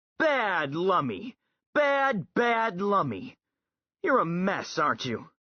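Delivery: sternly rebuking voice. A narrator reads John scolding Lummox: stern scolding. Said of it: "John looked stern".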